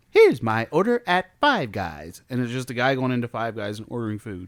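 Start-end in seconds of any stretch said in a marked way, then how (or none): 0.2-2.3 slow, swooping, sing-song, drawn-out dumb influencer voice. Mocking food TikTok videos, imitating that stupid influencer voice. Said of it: "it's that stupid voice".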